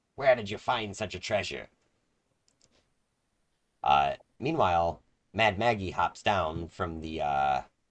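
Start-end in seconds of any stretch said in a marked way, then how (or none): 0.2-1.7 put-on croaking, croaky old-hag voice, higher. Narrating a game, the hag eyes the players' group: croaking hag voice. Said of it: "the hag croaks".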